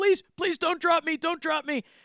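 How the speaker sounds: acted out frantic, panicked, desperate voice, very high. Retelling a comic scene where villains dangle from a hero: imitating panicked pleading. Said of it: "they're panicking".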